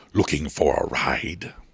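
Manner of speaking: deep, slow, rumbling voice of a looming beast. A seven-foot creature turns to face a woman and speaks: deep rumbling voice. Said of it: "a deep voice rumbled from it".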